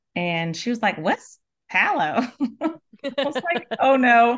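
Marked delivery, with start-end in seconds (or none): 0.9-2.2 put-on gentle, sweet, elderly Southern Mississippi accent. Retelling a woman's reply, in a sweet, old Southern Mississippi accent. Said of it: "very old Southern Mississippi accent".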